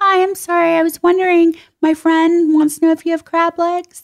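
very high-pitched, anxious, nervous voice. Showing the voice the speaker uses when ordering at a restaurant: high, nervous voice. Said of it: "I get that high, like nervous voice".

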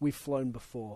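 put-on bone-dry, expressionless deadpan delivery. Retelling a coach's answer to a journalist's icebreaker question: retelling a deadpan reply. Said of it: "Belichick deadpanned".

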